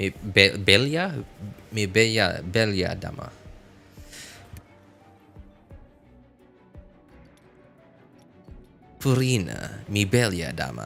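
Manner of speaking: romantic Spanish spoken in a very Western accent. Trying that kind of voice in Spanish to say something romantic, Western-sounding romantic voice. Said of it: "that sounded very Western".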